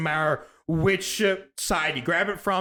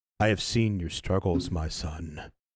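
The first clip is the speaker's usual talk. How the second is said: gentle, genuine, very low, soft-spoken voice; 11 semitones lower, 4 dB quieter than usual. Voicing the voice heard at the obelisk, addressing the player, soft-spoken and very genuine. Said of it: "almost um soft-spoken, very genuine voice".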